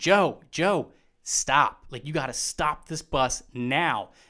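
slow, drawn-out scream. Retelling yelling up to his partner who was driving the bus: retelling a scream. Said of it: "I'm screaming".

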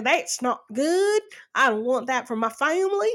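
put-on old-timer voice, disapproving. Imitating the older governor's attitude toward marijuana: imitating an old man. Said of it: "Sorry, I'm talking like that".

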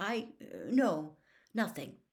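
ordinary delivery

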